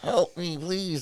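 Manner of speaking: tiny, soft, high-pitched, little begging voice. Imagining the world's smallest man trapped and calling out, smallest man's voice. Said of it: "He's like".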